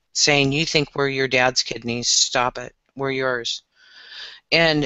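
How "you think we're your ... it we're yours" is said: ordinary delivery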